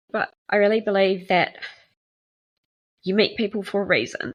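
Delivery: emotional, crying, tearful. Speaker thanks the Airbnb family that took them in, getting emotional, crying. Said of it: "I'm getting emotional".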